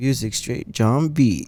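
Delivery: slow, drawn-out radio DJ announcer voice. Retelling a guy in the back of the car: imitating a dj voice. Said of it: "he was in the back doing the D J voice".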